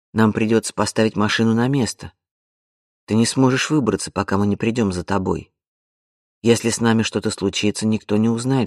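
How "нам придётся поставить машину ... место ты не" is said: plain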